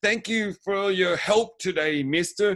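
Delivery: loud over-the-top sarcasm. Describing a character's scene, the speaker imitates his mock over-the-top, too-loud sarcasm. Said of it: "he says it way too loud".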